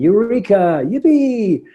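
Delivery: high, loud, jubilant joyful shout. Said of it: "like Archimedes jumping out in the bathtub and saying".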